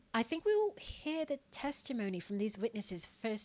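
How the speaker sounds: very hushed, soft, bad put-on British accent. Told to redo a line with a better british accent: bad british accent. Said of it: "do a better British accent than that".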